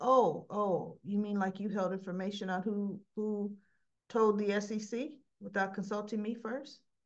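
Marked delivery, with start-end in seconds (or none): none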